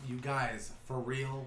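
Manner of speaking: soft, slow half-whispered voice. Speaker recounts half-whispering over their shoulder to the group, retelling a half-whisper over shoulder. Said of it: "I'm like literally whispering over my shoulder".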